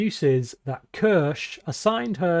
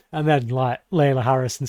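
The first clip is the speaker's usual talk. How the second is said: ordinary talk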